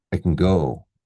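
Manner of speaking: stress on go, can kept light and reduced. Explaining which words take stress in 'i can go': stress on go. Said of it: "Go, yes, we stress it. So we say".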